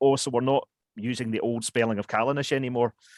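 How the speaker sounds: ordinary talk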